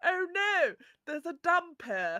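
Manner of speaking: very posh dubbed-film voice. Mocking the dubbed film voices of posh characters: imitating posh dubbed voices. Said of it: "a lot of the very posh people talk like this".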